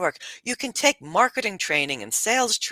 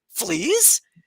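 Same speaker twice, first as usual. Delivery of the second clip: put-on high, horrified, aghast one-word delivery; 5 semitones higher than usual. Retelling a british student's reaction to the words flea market: imitating someone horrified. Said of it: "she's looking at me horror like".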